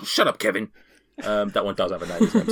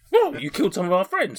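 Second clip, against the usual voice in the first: bizarre put-on horse voice, much higher; 10 semitones higher than usual. In an acted scene, a performer voices a horse: bizarre horse voice. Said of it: "this horse has got such a bizarre voice".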